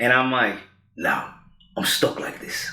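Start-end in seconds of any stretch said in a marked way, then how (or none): 1.0-2.7 very low, gravelly voice. Retelling waking up stuck with a changed voice, answering his mom, in a gravelly Jason Statham voice. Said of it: "sounded like Jason Statham, but like if I've been chewing on like gravel".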